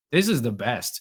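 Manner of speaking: ordinary talk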